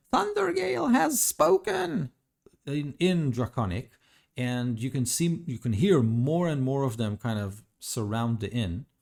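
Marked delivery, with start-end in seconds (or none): 0.1-2.1 crowd of kobolds shouting, much higher pitch. Game master voicing the kobold crowd around the inn, shouting kobold crowd. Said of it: "they shout".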